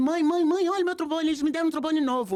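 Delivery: very high-pitched calling shout. Retelling how the son came home with a new trombone: imitating the son shouting. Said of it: "Aí ele chegou gritando".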